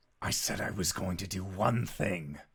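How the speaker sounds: menacing, monster-like tone. Narrating a scene, voicing Kefris: monster man tone. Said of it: "in the most monster man tone that he can".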